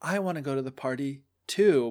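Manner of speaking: put-on sad character voice. Speaker retelling the Cinderella story, imitating sad Cinderella. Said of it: "Cinderella's like so sad".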